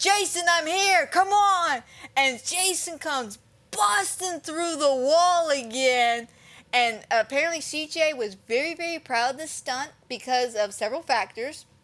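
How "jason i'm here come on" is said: acted, high-pitched screaming. Retelling a film scene where a character calls to Jason, imitating Tommy screaming. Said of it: "And as he's screaming, he goes".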